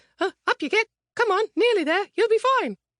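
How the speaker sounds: acted-out very high, cheery, chirpy, nervous, anxious coaxing. Retelling a tour guide calling down to coax them aboard: imitating chirpy but anxious tone. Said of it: "in a chirpy but anxious tone".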